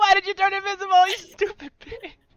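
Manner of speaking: shrill, very high, very loud, irritated, annoyed yell. Narrating a scene to listeners, the speaker voices a character: Kaori's annoyed shout. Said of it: "just shout".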